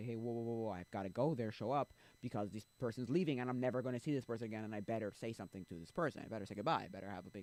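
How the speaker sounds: usual speaking voice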